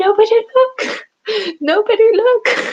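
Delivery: very high-pitched, loud, drawn-out squealing cry. Retelling what a figure says when his big hand goes flying off, high-pitched voice. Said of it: "but in such a high pitched voice".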